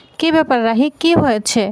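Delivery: ordinary delivery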